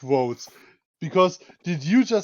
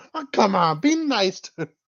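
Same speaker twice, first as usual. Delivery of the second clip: put-on old granny character voice; 3 semitones higher than usual. Imitating someone's nasal line as a granny looking in: imitating a granny voice. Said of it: "just a granny looking into the room".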